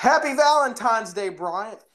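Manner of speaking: high-pitched, shrieked, screaming delivery. Retelling how the dude across the hall barged in: imitating someone screaming. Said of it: "and he screams".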